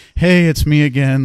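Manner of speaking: really light, high, drawn-out voice. Acting out the last of a string of calls, in a really light voice. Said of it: "Like really light voice".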